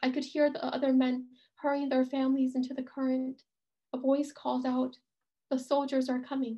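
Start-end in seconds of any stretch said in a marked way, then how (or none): none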